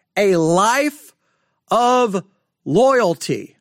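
each word paused, landing on loyalty. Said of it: "the reason I'm stressing the word loyalty".

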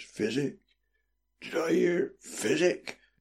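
weak, distant, drawn-out, faint and slow murmur. Narrator reading a stirring man's echoed question, in a faint, faraway voice. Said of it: "in a faint, faraway voice".

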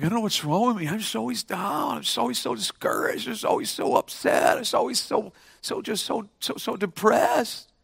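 teary, breathy, near-whispered lamenting voice. Retelling a girl who came up in tears: imitating a tearful girl. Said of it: "she's all in tears".

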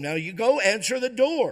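mock yelling, rising, high-pitched. Telling a story, the speaker voices a mother yelling at him again: imitating a mother yelling. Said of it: "she yells at him".

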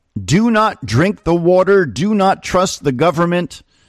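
toned-down, mild scream. Recounting what a well-known woman is publicly saying, the speaker acts it out: retelling a scream. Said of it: "she is screaming".

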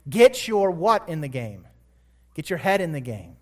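ordinary delivery

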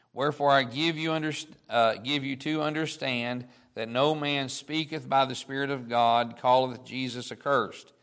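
normal talking voice

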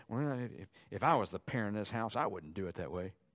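put-on muttering under breath. Acting out a teenager grumbling about a parent's decision: imitating muttering under breath. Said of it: "begin to murmur under your breath and say".

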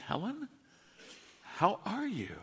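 somber, soft, deeply concerned pastor-like tone. A pastor recalling visiting a woman in bad shape: retelling a very concerned voice. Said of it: "I said in a very concerned voice".

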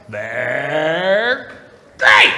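first word stretched out with wide swinging pitch. Speaker quotes a cereal mascot's slogan: Tony the Tiger voice. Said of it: "Tony Tiger".

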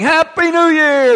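put-on, very high, shrill called-out yell. Retelling a nightclub crowd's words after an explosion: imitating a crowd yelling. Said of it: "they're yelling".

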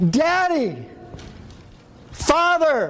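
very high, impassioned, intense crying out. The speaker demonstrates the believer crying out through the Spirit: intense cry. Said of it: "crying out with intense feeling".

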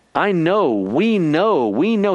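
mocking, very slow, dragged-out sarcastic drawl. Speaker acts out the Apostle John mocking the Gnostics, acting out sarcasm. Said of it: "He's being very sarcastic toward the Gnostics".

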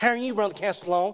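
put-on Tennessee accent, nasal. Quoting a man from tennessee greeting the speaker, nasal tennessee accent. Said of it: "he talks through his nose like this".

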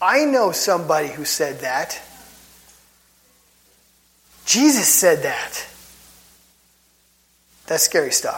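agitated and worked up, slow and deliberate. Talking about what someone said in these movements: getting worked up. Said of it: "Sorry, I'm getting worked up".

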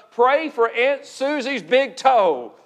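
slow, drawn-out, sarcastic mock tone. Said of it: "I say that sarcastically".

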